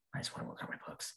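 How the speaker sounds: soft, unvoiced whisper.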